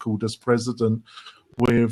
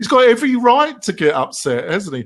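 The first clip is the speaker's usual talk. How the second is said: high, loud English sarcasm. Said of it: "that was a bit of English sarcasm there".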